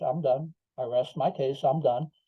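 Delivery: ordinary delivery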